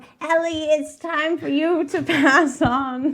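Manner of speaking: put-on high, elderly woman's voice. Retelling a story, prompted by a listener, the speaker redoes a line in old lady voice. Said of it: "Where's the old lady voice?".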